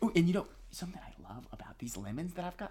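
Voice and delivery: hushed, secretive whisper.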